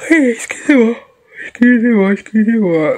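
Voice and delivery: talking through a yawn. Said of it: "Je baille".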